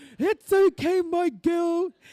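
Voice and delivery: high, loud, fond, reassuring tone.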